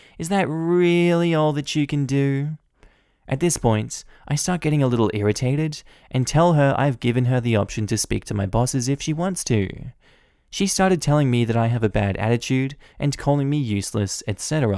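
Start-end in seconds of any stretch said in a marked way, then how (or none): 0.2-2.6 slow, drawn-out, whiny complaining voice. Retelling what a woman on the phone asked: imitating a whiny voice. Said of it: "she switches to the whiny voice again".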